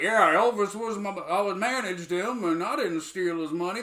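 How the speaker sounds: easygoing, relaxed cowboy voice. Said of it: "Guy sounds like a fucking cowboy".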